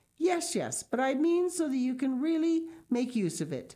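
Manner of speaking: eager, pressing tone. Heidi presses Peter after his reply, eager. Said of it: "continued Heidi eagerly".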